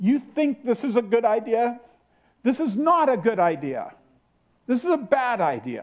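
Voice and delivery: put-on angry ranting yell. Retelling yelling at God alone in the bedroom, retelling angry yelling. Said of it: "And I was yelling at him".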